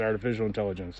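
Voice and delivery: quick, soft parenthetical aside.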